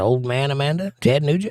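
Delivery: ordinary talk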